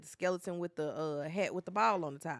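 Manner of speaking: ordinary talk, nothing marked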